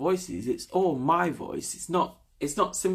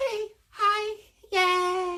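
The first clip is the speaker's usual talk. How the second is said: put-on very high, sweet, cute girly voice. Imitating girls the speaker saw in Japan, cute high-pitched girly voice. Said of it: "those voices are really cute".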